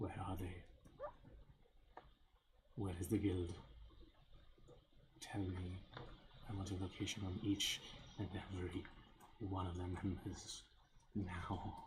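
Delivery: deep, rough, grating, almost gravelly voice. Voicing a player character demanding answers from a man: deep, almost gravelly voice. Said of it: "in this kind of deep, almost gravelly voice".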